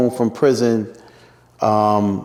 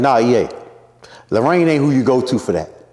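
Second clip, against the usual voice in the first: ordinary delivery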